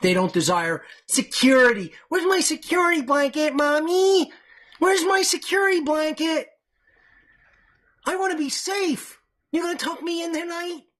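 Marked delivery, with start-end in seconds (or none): 2.1-10.8 very high, mocking, put-on childish voice. Mocking listeners who want to be safe: mocking childlike voice. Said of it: "that's what all of you sound like".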